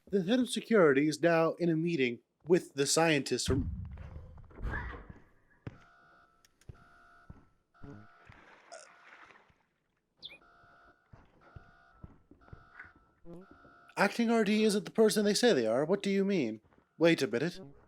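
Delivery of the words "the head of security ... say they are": clumsy nature-documentary narrator voice with swooping pitch. Narrating what the head of security is doing, in a bad nature documentary voice. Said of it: "I'm very bad at doing the nature documentary voice".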